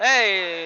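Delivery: loud hollering with a drawn-out "hey". Calling a football play as a flag is thrown: yelling into the microphone. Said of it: "I do apologize for yelling in the microphone".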